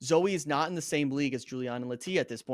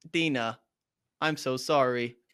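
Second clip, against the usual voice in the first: robotic host voice. Repeating the classic goodbye line as a robot host: robot host voice. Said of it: "You can't do that as a robot".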